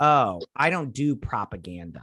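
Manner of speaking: ordinary talk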